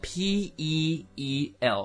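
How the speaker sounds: very slow, letter-by-letter spelling.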